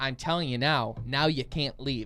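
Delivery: plain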